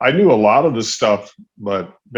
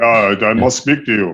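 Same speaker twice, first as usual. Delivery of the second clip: put-on German-accented voice. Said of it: "It's a good impression".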